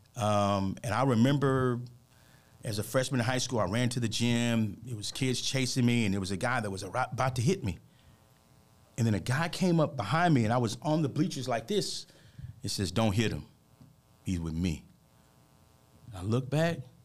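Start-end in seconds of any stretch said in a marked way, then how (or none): 12.9-14.9 put-on deep bass voice, lower pitch.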